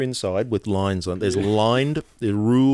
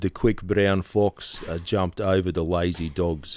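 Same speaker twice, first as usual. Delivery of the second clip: put-on South African accent; 3 semitones lower than usual. Prompted by the other speaker to say a phrase in accents: South African accent. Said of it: "South African".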